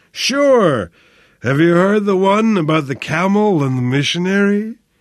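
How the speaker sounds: high, delirious rambling mumble, drawn-out "sure". Narrating feverish Flynn answering Sebastian's plea: muttered in delirium. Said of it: "muttered Flynn in delirium".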